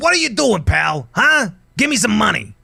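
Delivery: grumpy, cranky little goblin voice, pitched very high. Describing how goblins should be, a speaker acts one out: cranky goblin voice. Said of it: "I always think they should be a little cranky".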